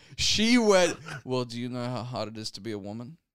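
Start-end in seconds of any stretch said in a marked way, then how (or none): 1.2-3.2 soft grumble under the breath. Retelling what she said after everyone laughed: grumbled into herself. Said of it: "she like grumbled it into herself".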